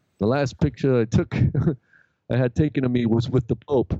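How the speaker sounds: put-on slight Brooklyn accent. Retelling what a man said while getting a picture taken, in a Brooklyn-y accent. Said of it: "it was kind of this Brooklyn-y accent".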